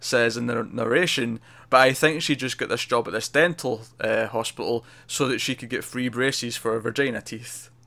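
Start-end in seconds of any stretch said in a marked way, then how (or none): none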